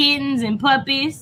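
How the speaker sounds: usual speaking voice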